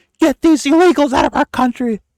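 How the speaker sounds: very high, shrill, loud screaming. Mocking people who scream about immigrants: imitating people screaming. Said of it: "Motherfuckers are out here screaming".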